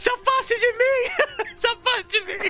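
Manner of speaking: put-on shrieking old lady voice. Voicing a game's old woman after Horus hands her coins, old woman screaming. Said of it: "Aí a velha começa a gritar".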